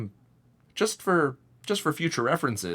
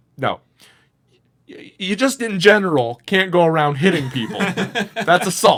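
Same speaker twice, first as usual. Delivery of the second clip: mock very loud, fed-up, pitched-up annoyed scolding; 6 semitones higher, 9 dB louder than usual. Retelling refusing a woman again and again, retelling being pissed off. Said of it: "now I'm kind of like pissed".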